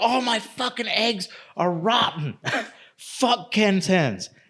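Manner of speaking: high-pitched, drawn-out, ballistic, furious ranting outburst. Retelling the wife's outburst over rotten eggs: imitating someone going ballistic. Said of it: "she's just fucking going absolutely ballistic".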